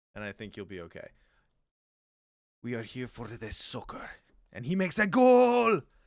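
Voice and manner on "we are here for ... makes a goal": put-on excitable Spanish accent, very loud and swooping. Suggesting a Spanish accent to another player: excitable Antonio Banderas voice. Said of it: "just do excitable Antonio Banderas".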